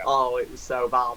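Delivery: plain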